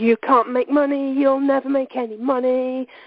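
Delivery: nagging, shrill, screeching little green monster voice. Explaining a negative belief as a little green monster in your head: screaming little monster voice. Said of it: "he's screaming this at you constantly".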